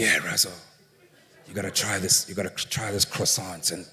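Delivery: hushed, whispery near-whisper. Retelling what a friend said at the market: whispering like Tibbs. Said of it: "He spoke like he's whispering".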